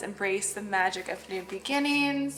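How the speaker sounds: ordinary delivery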